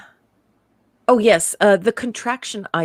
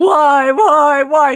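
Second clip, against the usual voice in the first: high, loud, anguished shout. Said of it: "in my notes".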